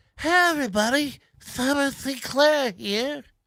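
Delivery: nasal voice. Greeting everybody at the start of a video: nasal voice. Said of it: "That's nasal as fuck".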